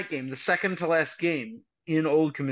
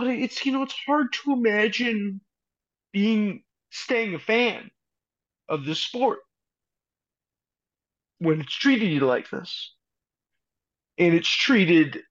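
very emotional, voice pitched up; 5 semitones higher than usual. Speaker talks about a team being taken away from its fans, getting emotional. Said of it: "I'm getting real emotional about this".

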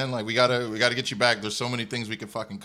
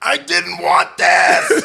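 raw, very loud, rough, drawn-out scream; 8 semitones higher, 13 dB louder than usual. Retelling what someone screamed into the air during a wild day: retelling a scream. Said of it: "he just screams into the air like".

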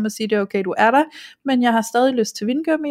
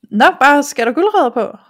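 loud, cheeky, play-acted playful teasing tone; 3 semitones higher, 6 dB louder than usual. Retelling what a man asked while the speaker bought candy, mimicking a cheeky remark. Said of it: "han var sådan lidt kæk i det, sådan lidt sjov".

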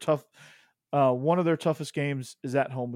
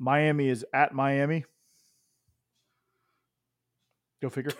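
dry, flat, expressionless deadpan delivery. Talking about a football matchup with others, delivered deadpan. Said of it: "the deadpan".

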